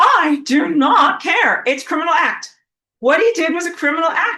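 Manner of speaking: loud, very slow, sassy and defiant. Showing listeners how to answer the sun's excuses: with attitude. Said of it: "With attitude".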